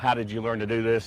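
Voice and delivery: plain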